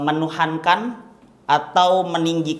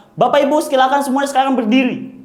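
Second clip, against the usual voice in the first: loud, high, energetic, pumped-up rousing voice; 9 semitones higher, 3 dB louder than usual. Showing intonation technique for getting people fired up: loud rousing energy. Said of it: "begitu pengen orang semangat".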